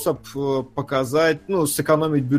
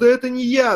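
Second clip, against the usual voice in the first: tearful, bawling, high-pitched sobbing, pleading tone; 9 semitones higher than usual. Retelling a film scene, the tortured suspect pleads with CIA agents, imitating someone crying. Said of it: "прям плачет, ревет".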